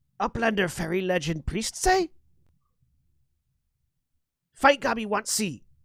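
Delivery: high-pitched fantasy goblin creature voice. Voicing a goblin calling out from off to one side: goblin voice. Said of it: "the goblin sort of looks at you quizzically".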